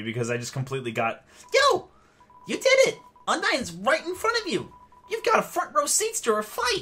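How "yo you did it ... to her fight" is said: put-on very high, loud, excited squealing kid voice. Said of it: "I forgot to do the voice for you".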